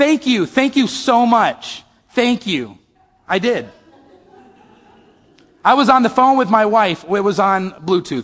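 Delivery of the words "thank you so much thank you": drawn-out, swooping, sarcastic mocking gratitude. Retelling talking to another driver through an open window, retelling own sarcastic thanks. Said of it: "I said sarcastically".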